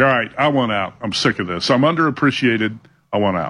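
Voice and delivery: ordinary talk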